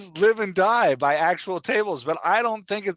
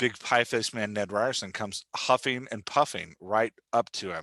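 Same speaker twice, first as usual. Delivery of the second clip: ordinary talk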